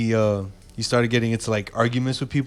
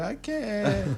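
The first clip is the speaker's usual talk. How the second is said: mock-crying, higher and quieter; 6 semitones higher, 4 dB quieter than usual. Retelling a story about a drunk friend at a party, acting out her reply through tears, imitating someone crying. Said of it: "stop crying then".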